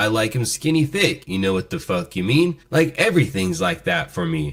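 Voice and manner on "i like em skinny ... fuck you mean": ordinary talk, nothing marked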